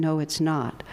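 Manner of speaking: normal talking voice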